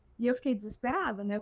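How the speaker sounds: ordinary talk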